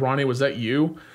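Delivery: plain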